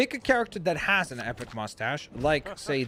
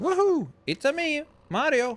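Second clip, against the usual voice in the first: very high, whooping hero character voice; 12 semitones higher than usual. Making a Mario design in the game, announcing Mario time: Mario voice. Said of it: "Mario time".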